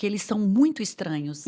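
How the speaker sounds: ordinary talk, nothing marked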